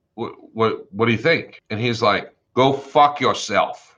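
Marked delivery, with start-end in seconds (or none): 2.6-3.7 put-on thick Boston accent, higher. Retelling the other side's reply to a settlement offer, in a thick boston accent. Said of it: "he's got this thick Boston accent".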